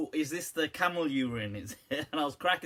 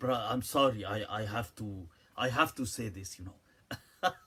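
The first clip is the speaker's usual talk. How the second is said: put-on English with Arabic accent; 5 semitones lower than usual.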